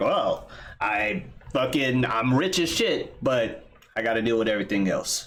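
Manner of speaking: ordinary talk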